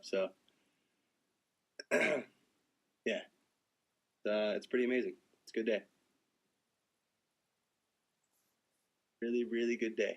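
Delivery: a little choked up and emotional. Talking about a happy morning, starting to get a little choked up. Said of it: "I'm starting to get a little choked up".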